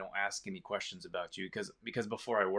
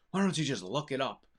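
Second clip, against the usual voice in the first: high, loud snapping retort, said louder. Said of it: "he just kinda snapped".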